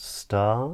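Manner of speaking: upward inflection, pitch rising on the word "start". Teaching how the voice goes up in a question, rising pitch. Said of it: "It rises".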